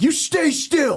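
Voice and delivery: put-on screaming. Retelling screaming at a delivery driver in a car: imitating screaming. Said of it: "when you're screaming at a".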